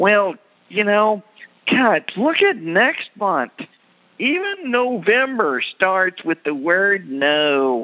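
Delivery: mock, high, drawn-out whiny complaining delivery. Retelling what a woman they know said, mimicking someone whining. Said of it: "she was just kind of whining".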